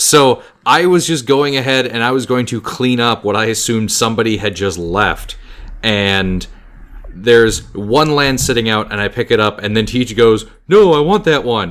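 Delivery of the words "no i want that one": sarcastic, mocking tone. Retelling what Teach said when you picked something up: imitating Teach's sarcastic tone. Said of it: "in his usual sarcastic tone".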